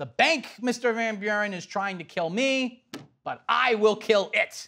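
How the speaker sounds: very dramatic, theatrical, big delivery. Retelling a quote to a class, acting it out: dramatic Andrew Jackson impression. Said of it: "I'm still gonna sound dramatic".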